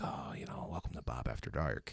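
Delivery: hushed, very soft, seductive whisper. Retelling the late-night radio show character he used to do: put-on sexy late-night whisper. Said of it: "I'm whispering. I'm being like".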